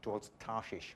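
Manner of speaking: ordinary delivery, nothing marked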